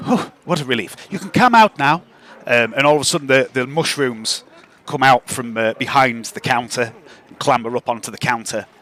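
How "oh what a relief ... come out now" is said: prim and proper shopkeeper voice, higher. Voicing the shopkeeper as players enter her shop: prim and proper Lady Roth voice. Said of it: "really prim and proper".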